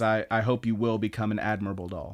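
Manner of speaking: normal talking voice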